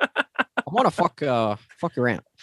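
botched character voice, pitch swooping and missing. Doing a Tony Stark voice that comes out like Obama. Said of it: "You went for Robert Downey Junior and ended up with Obama".

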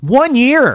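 very loud, shrill, high-pitched yelling. The speaker, admitting to being very passionate, is yelling. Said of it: "So I'm yelling".

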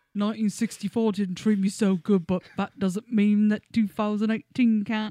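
put-on old-fashioned British accent. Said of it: "it's just like an old British dude".

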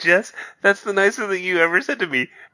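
very high, tearful, welling-up, teary-sounding voice. Thanking a co-host for a compliment: mock tearful. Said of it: "sounded like you were saying that with, like, tears in your eyes".

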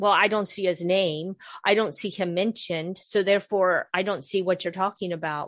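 plain

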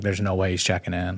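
plain

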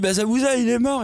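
high, sobbing voice, words blubbered through tears. Retelling a boy explaining to her while crying over his reading, imitating someone crying. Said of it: "parce qu'il est en train de chialer".

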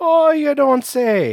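put-on very high, very slow, slightly Irish accent. Replying to a joke about the Mall of America: put-on accent, a little Irish. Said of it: "That sounded a little Irish".

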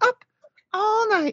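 put-on squeaky, very high girl's voice. Retelling a late-night tv intro: imitating a high-pitched voice. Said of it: "that girl with the high pitched voice would be like".

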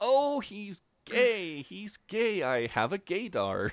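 high, slow, excited squeal.

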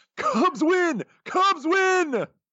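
loud, high-pitched announcer-style call. Your co-speaker urges you to say the Cubs line like him; give an attempted Harry Caray impression. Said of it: "gotta say it like Harry Carey".

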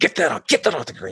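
mock upset, scolding tone. Retelling an old man in the Mesa Temple scolding the speaker, imitating an upset scolding. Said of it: "this like old guy is like super upset with me".

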